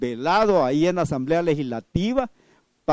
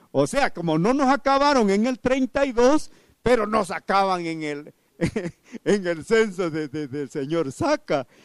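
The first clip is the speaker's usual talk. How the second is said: burlesque mockery with heavy sarcasm; 3 semitones higher than usual. Speaking to listeners about a former official's claim: sarcastic, mocking tone. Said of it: "yo lo digo en tono sarcástico, burlesco y todo".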